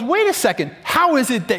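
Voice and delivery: mad, indignant, swooping pitch. Telling a story, the speaker quotes what she says to him: acting out her being mad. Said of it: "because she's mad".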